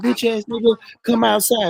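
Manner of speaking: mock angry yelling. Speaker imagining a man in his front yard yelling at him, acting out an angry yell. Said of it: "you just yelling".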